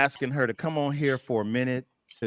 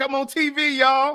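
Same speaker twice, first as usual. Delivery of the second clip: thrilled, bragging tone, very high pitch and slow; 12 semitones higher, 4 dB louder than usual. Imitating a guest's excited reaction to hearing herself on air: imitating Tamara excited. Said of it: "She listened to it like".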